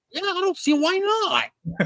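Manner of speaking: very high, slow, awkward, drawn-out cringey voice. Retelling a line from a scene he cringed at: imitating the actor's voice. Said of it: "his voice sounds like that".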